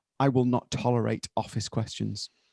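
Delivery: deadpan delivery. Speaker retells a woman's answer to a man's question; retold deadpan reply. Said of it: "it's deadpan".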